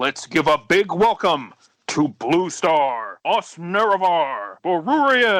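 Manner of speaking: big MC-style announcer voice. Introducing the guests by name, the host speaks in announcer voice. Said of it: "I'm gonna do my announcer voice".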